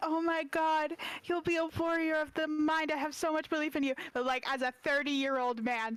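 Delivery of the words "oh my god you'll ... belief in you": doting, gushing, adoring, encouraging tone. Showing how Athena talks to a child: Athena encouraging a child. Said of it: "she's like".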